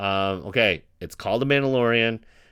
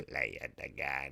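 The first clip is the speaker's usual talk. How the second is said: very soft, hushed emperor voice; 9 semitones lower, 18 dB quieter than usual. Recounting someone's attempt, the speaker does his emperor voice. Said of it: "his emperor voice".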